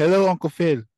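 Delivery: very high-pitched, loud, put-on English accent. Playing his imagined son greeting someone, the speaker puts on an english accent. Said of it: "you gonna have that english accent".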